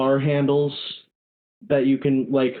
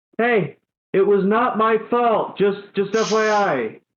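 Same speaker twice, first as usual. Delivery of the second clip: very slow, high, drawn-out holler; 7 semitones higher than usual. A player's character aboard the ship shouts toward the stairwell, yelling up a stairwell. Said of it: "Carl is going to yell at the stairwell".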